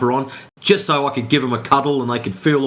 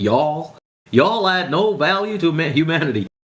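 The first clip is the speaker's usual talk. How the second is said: slow, fake American accent; 4 semitones higher than usual. The speaker reads out a commenter's message on flat Earth: put-on American accent. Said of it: "I've got to get an American accent".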